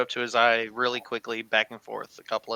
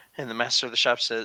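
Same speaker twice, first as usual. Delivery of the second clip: ordinary delivery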